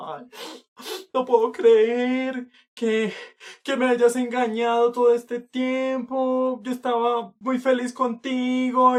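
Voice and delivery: very high, loud, sobbing, tearful wail. Retelling a girlfriend's phone call after she found out: imitating someone crying. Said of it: "llorando y diciendo".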